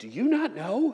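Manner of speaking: slow, angry disbelief. Telling the story, the followers answer Jesus incredulously, angry disbelief. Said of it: "There's deep anger in their voice".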